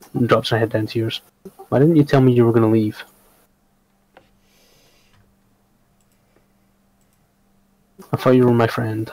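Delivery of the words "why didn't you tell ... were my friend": voice dropped low and hushed. A character asks the listener why they left without telling her, lowered voice. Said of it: "She kind of lowers her voice for a minute".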